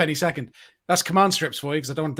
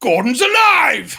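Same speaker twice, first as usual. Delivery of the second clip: big, booming, pitched-up bellow at full volume; 8 semitones higher, 6 dB louder than usual. Imitating a famous actor greeting people who point at him: Brian Blessed big booming voice. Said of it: "He'll just go".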